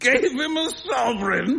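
abrupt, high, shouted outburst. A man echoes another man's dismayed words back at him, shouting. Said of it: "shouted [name]".

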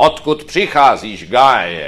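slow, lofty, grand stage declamation. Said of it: "takovým vznosným hlasem řekl".

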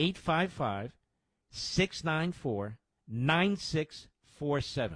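spoken slowly. Host repeating a donation phone number for listeners, said slowly. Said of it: "Let me say that slowly".

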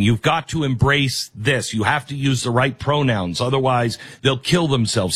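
ordinary talk

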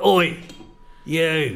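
put-on New Zealand accent. Retelling what a man looming over the car said, in a kiwi accent. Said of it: "in his Kiwi accent".

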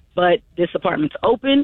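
ordinary talk, nothing marked

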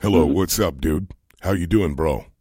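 grave, serious broadcast newsreader delivery. Imitating a former coworker's off-air greeting, in a news anchor voice. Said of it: "you still have the anchor voice".

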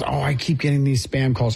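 plain

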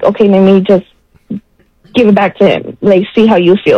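normal talking voice

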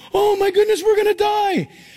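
high, frantic, terrified, panicked outburst. Retelling how the prophet's assistant reacted to the enemy army, imitating a panicked freak-out. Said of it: "his assistant's freaking out".

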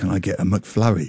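hushed, soft little half-whisper under the breath. Retelling how someone asked a daughter for a mcflurry: imitating someone half-whispering. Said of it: "I hear him whisper to my daughter".

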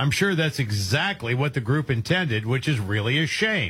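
ordinary delivery

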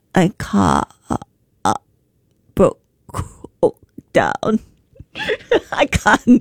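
sing-song with each word dragged out. Acting out a listener's excuse call to his boss: Flash the Sloth impression. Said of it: "my best impersonation of Flash the Sloth".

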